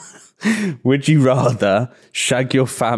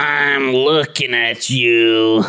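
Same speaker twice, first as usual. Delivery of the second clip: put-on raspy slug monster voice. Doing a cartoon character voice for friends to guess. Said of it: "Monsters, Inc, the fucking slug".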